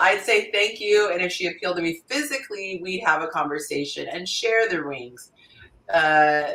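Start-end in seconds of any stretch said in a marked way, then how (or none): none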